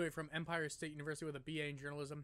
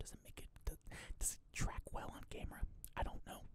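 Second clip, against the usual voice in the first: whispered voice, quieter. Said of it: "I whisper a lot".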